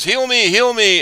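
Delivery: very high-pitched yelling. Retelling how a player yelled at his friends in a game: imitating someone yelling. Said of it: "starts yelling at his friends".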